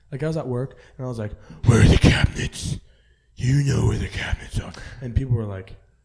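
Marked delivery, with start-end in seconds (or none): 1.6-4.7 very loud, deep, raspy voice. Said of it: "It sounded like Batman".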